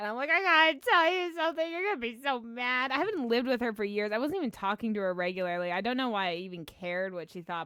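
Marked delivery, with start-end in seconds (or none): 0.3-2.9 play-acted hysterical sobbing and crying throughout. Retelling phoning her mom with big news: retelling hysterical crying. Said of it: "crying, like, hysterical".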